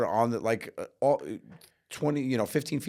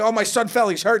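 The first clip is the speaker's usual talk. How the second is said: put-on panicked, frantic alarm; 11 semitones higher, 8 dB louder than usual. Retelling how a father reacted to a fall: imitating a panicked father.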